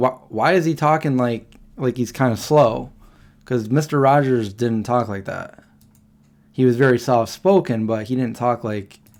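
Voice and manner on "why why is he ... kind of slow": normal talking voice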